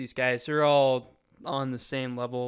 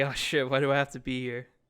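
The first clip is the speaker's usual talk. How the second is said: usual speaking voice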